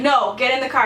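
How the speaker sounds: ordinary delivery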